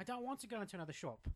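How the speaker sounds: put-on upper-class British accent. Asked to voice the man in a retold story, speaking in a posh British accent. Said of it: "your your posh British accent".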